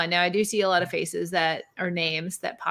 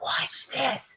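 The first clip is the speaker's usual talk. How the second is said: put-on whisper, higher and quieter; 7 semitones higher, 4 dB quieter than usual. Imitating Peter booting people from the chat: imitating Peter whispering.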